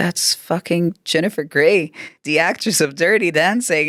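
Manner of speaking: words blurted out through tears, crying. Retelling telling a friend who sent a message: retelling own crying words. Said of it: "And I was crying saying this".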